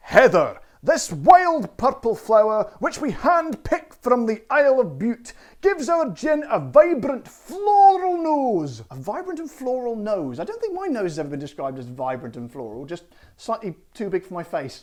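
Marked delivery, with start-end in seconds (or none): 0.1-8.8 deliberate put-on Scottish accent, raised and unhurried. Reading out your gin's Isle of Bute description to listeners, in a Scottish accent. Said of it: "I shall be bringing out the Scottish accent again".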